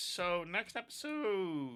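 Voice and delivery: voice cracking mid-phrase. Wrapping up an episode, the host's voice cracks mid-sentence. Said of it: "my voice just cracked".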